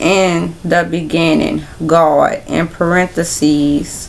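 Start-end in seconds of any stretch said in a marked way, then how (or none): none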